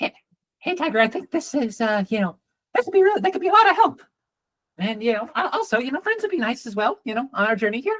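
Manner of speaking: rapid-fire, high, feminine cat voice chatter. Voicing a green cat who pops up to talk to tiger, talking very very quickly. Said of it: "Talking very very quickly".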